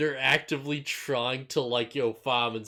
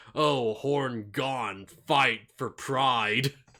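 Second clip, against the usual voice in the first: weird beast voice, fragmented sentences. Speaker retells a creature vowing to fight Greymon: weird beast voice. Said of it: "saying it in this weird, like, like beast".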